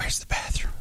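mock high-pitched whisper. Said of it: "he talks in this high-pitched whisper".

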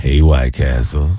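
very deep, very low, flirty, put-on sexy voice.

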